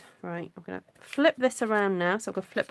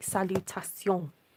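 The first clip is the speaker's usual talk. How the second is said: put-on French accent, attempted French pronunciation. Musing whether salut is short for a longer word: attempted French accent. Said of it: "That's my attempt at a French accent".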